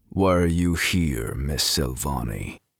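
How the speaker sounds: rough, gruff-sounding voice. A man in an office chair questions the woman facing his armed men; gruff voice. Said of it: "a gruff voice said".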